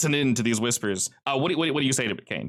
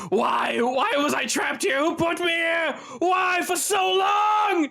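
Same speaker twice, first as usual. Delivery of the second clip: very high, slow, drawn-out monster screaming wail. Voicing a brick creature that has gone from whispering to screaming: screaming creature voice. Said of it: "goes from whispering straight up to screaming".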